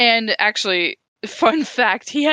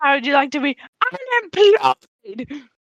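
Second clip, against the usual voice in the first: put-on angry British voice, higher; 5 semitones higher than usual. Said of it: "I like to do Michael Caine angry".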